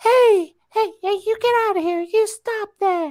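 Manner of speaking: shrill, very high-pitched scolding. Describing a referee ejecting someone before the bell: high-pitched Bryce Remsburg impression. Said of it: "highest pitch bitch voice I've ever heard".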